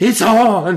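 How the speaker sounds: full, loud, high shout, played in character. Calling to a partner across the room: yelling in character. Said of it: "and I yell".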